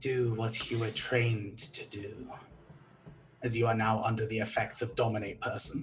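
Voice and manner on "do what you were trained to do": low, slow whispering. Game master voicing a whisper the players hear, whispering. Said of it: "you hear a whisper".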